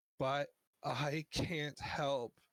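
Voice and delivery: high, weeping voice, crying through the words. Narrating a game scene, voicing a character's line: weeping. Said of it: "She's like weeping and she's like".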